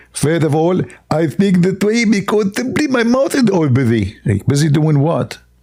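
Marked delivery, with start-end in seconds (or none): 0.2-4.2 voice squeezed and strained, forced out. Answering as Zakir Naik why he talks that way, in a squeezed Zakir Naik voice. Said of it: "your voice coming with a lot of rain and it's, you like you squeeze yourself".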